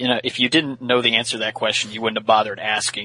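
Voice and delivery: ordinary talk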